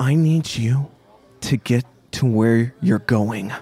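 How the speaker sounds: quiet, through gritted teeth. Narrating a scene, the speaker voices a woman speaking into the listener's ear: quiet, through gritted teeth. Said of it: "speak through her teeth, very quietly into your ear".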